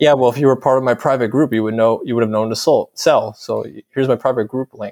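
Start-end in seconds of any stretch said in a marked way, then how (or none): none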